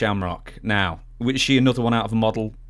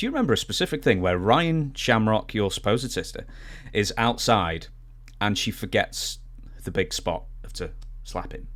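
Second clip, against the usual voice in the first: normal talking voice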